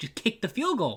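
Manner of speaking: very high-pitched, fed-up screaming. Recalling watching the game, retelling screaming at the tv. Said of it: "I was screaming at my T V like".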